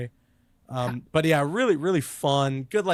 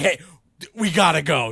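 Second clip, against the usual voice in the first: put-on frantic, urgent urging voice; 3 semitones higher, 6 dB louder than usual. Retelling how the character comes back to class: imitating Miles frantically. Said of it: "he comes back frantically like".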